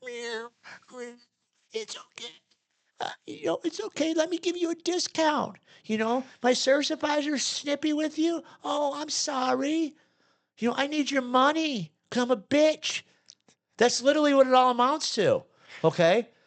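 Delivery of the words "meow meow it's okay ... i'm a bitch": meek, submissive, cowering, pitched-up simpering voice. Ranting about shop bosses, acting out one caving in, imitating a meek, submissive boss. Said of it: "the boss lays down like a little fucking cat".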